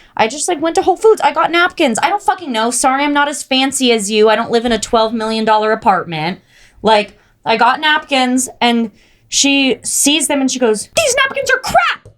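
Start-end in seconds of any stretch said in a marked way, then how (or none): 11.0-12.0 mock shrill, furious shriek pitched way up. Retelling her reaction to the napkins the speaker bought, retelling furious screaming. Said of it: "And is just screaming at me".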